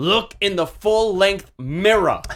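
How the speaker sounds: slow, high put-on Bensonhurst Brooklyn accent. Co-hosts joke that Vince cannot say mirror, Vince impression with Bensonhurst accent. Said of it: "Sounds like my wife from Bensonhurst".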